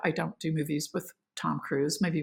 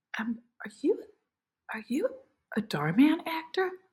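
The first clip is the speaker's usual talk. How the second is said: shy, timid, hesitant, halting, higher voice; 9 semitones higher, 4 dB quieter than usual. Retelling a question from a girl waiting for an elevator: imitating a shy girl. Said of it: "this very shy girl says".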